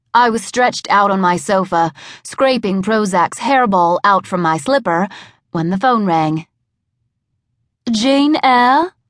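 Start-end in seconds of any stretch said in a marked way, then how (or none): 8.0-8.9 decidedly phony, high-pitched fake British accent. Reading a story, a woman calls the narrator on the phone: decidedly phony British accent. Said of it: "with a decidedly phony British accent".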